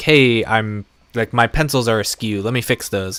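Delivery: ordinary talk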